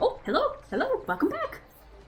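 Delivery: very high, thrilled, eager, excited swooping voice. The gnome pops up from the back to greet the returning group; Pip, very excited. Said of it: "pop up from the back very excitedly".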